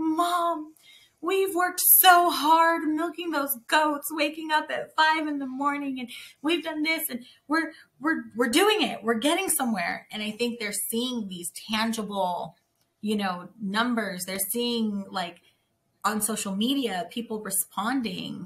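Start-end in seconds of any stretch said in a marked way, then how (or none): 0.0-10.1 acted, heartfelt, emotional pleading tone, pitched up. Retelling what the fourteen-year-old says, imitating someone getting emotional. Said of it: "but she gets emotional".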